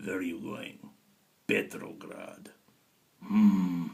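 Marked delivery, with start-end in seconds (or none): 0.0-2.5 soft, put-on Russian accent. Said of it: "that sounds very Russian when you do that".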